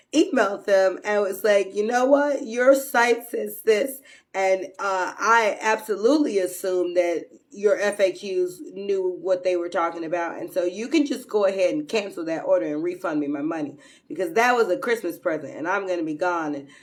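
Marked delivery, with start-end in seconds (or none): none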